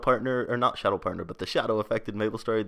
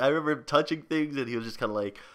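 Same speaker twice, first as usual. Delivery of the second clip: normal talking voice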